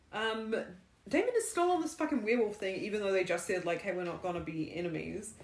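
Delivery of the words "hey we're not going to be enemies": plain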